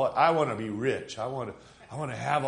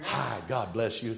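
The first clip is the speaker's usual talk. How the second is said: put-on American Southern accent; 3 semitones lower, 3 dB quieter than usual. Describing churchgoers who faked it, imitating them in a fake southern accent. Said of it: "take on a southern accent when you're not even southern".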